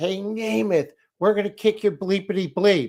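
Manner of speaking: play-acted rowdy heckler screaming, high. Retelling a heckler in the back of the room: imitating someone screaming. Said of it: "starts screaming at him".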